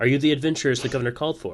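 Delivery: put-on high, loud, piping young child voice. Game master voices a child running up to the adventurers, in a child character voice. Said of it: "the child asks".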